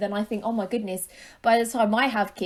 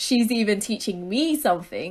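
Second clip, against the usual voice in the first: usual speaking voice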